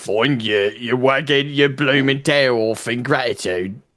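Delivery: low, growling orc voice. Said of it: "read it, like, in the orc accent".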